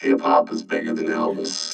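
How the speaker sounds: very low, monotone robot voice.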